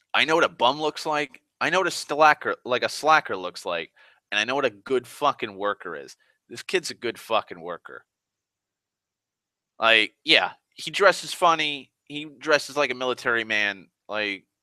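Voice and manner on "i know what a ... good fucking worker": ordinary talk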